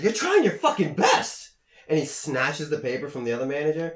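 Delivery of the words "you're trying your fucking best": mock furious outburst, very high and loud. Retelling how a manager snapped at a coworker, acting out someone losing it.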